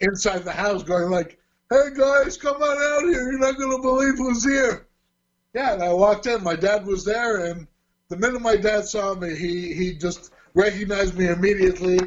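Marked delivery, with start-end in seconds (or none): 1.7-4.9 play-acted, high, calling-out yell. Retelling the brother calling the family out: imitating someone yelling. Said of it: "he yells out to the rest of my family".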